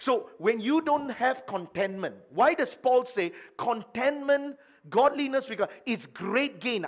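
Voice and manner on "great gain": emphasis on 'great gain'. Explaining a verse about contentment to listeners, stressing 'great gain'. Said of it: "I emphasize the word great gain".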